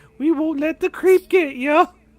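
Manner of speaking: very high put-on falsetto character voice. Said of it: "I'm working on my voice".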